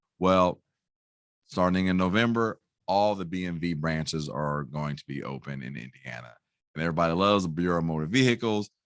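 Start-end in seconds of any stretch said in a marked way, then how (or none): 6.8-8.7 dry, tongue-in-cheek sarcastic tone. Sharing news that motor vehicle branches will reopen: sarcastic. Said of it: "I say that sarcastically".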